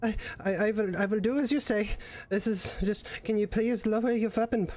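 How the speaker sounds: trembling voice. Voicing a character pleading for a weapon to be lowered: trembling voice. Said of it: "trembling at this point".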